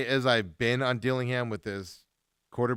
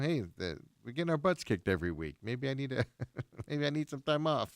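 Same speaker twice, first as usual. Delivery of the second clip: heavily sarcastic football player voice; 8 dB quieter than usual. Imagining aloud what Alvin Kamara might say: sarcastic Alvin Kamara impression. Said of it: "I'm being sarcastic here".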